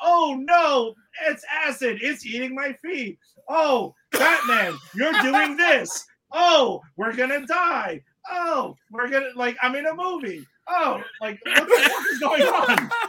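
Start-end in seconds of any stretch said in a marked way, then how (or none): 0.0-11.0 panicky, slow, drawn-out, blow-by-blow delivery. Imitating a movie extra's panicked play-by-play: imitating an actor's panicked play-by-play. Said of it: "that dude giving a play-by-play like".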